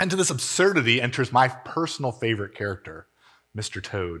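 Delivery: ordinary delivery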